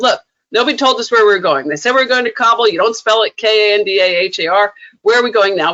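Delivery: ordinary talk, nothing marked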